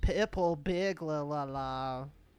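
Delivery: put-on Scottish accent. Trying to say purple burglar alarm as a Scottish person, Scottish accent. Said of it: "say purple burglar alarm as a Scottish person".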